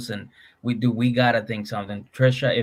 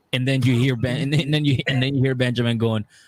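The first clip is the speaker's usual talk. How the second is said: usual speaking voice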